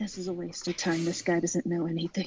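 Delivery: hushed stage whisper, half-whispered, in put-on voice. Voicing a character who leans over to another, half-whispering in character. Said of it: "and whispers".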